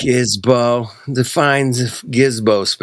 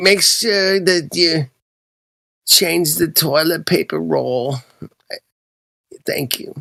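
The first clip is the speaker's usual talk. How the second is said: motherly voice; 6 semitones higher than usual.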